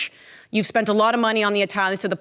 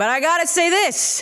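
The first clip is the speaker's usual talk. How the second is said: put-on Italian accent, higher pitch; 9 semitones higher than usual. Addressing fellow italian fans about the players: put-on italian accent. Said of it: "With an Italian accent, by the way".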